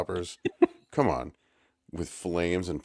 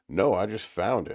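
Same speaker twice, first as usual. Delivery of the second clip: panicky, caught-out sounding delivery; 2 semitones higher than usual. Retelling a character's reply when asked about a book: imitating Isaac panicking. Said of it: "nice panic in there, Isaac".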